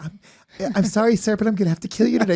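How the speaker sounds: put-on childlike, high-pitched little kid voice through voice changer. Retelling a game player using a voice modulator, in a little kid's voice. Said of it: "So it'll just make a little kid's voice".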